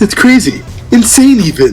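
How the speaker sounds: high cartoon lion voice. After being asked to do the voice, giving a Snagglepuss impression. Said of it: "I will if you do the voice".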